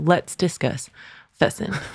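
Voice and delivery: breathy, hushed put-on delivery, nearly whispered. Doing an impression of an internet comedian when asked: imitating Landon Talks. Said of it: "Do your best version of Landon".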